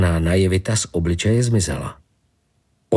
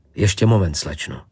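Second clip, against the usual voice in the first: plain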